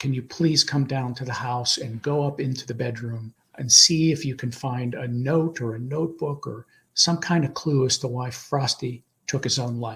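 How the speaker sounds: plain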